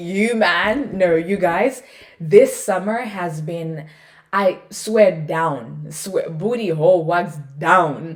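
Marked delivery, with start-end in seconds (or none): 0.0-1.0 teasing, anticipatory delivery, as if big news. Showing how Fuhad and James start when they have news. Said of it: "they'll be like".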